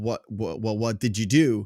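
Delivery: plain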